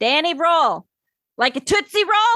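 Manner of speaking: put-on high shout-talking, words hollered out, rising. Retelling how a dorm neighbour always said her name: imitating a girl's shout talking. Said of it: "she would shout talk".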